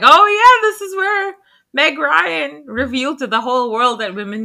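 excited sudden realization.

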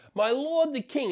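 acted, high, loud yell, calling out across distance. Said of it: "he yells out and he says".

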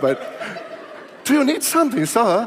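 put-on, taken-on British accent. Retelling what a woman asked him, doing it again; British accent impersonation. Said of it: "That's my British accent impersonation".

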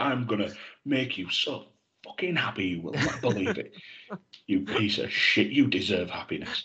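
put-on, hushed, aggressive, menacing delivery. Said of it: "it's just aggressively said".

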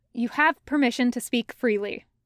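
plain reading voice

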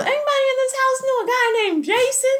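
high-pitched, loud shouting. Recounting a phone call, speaker acts out his younger brother: retelling a yell. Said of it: "my younger brother yells".

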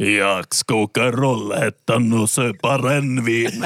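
put-on heavy Finnish accent. Retelling a man's reply on a bus after being yelled at, heavy Finnish accent. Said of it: "Med grav finsk brytning svarar han".

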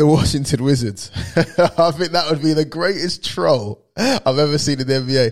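amused, cracking up, laughing through the words. Speaker offers listeners one more idea, laughing while talking. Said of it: "I'm laughing at this already".

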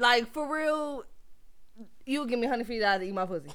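ordinary talk

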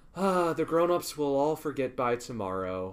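normal talking voice

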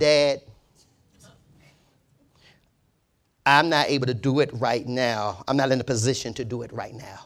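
slow, polite and respectful. Father re-enacting what his son said to him, imitating son's respectful tone. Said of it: "He said it respectfully. Let me say it like he said".

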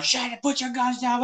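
play-acted shrill, high-pitched shouted yell. Retelling a film standoff where everyone is yelling: imitating people yelling. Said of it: "they're all yelling at each other".

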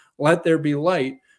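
ordinary talk

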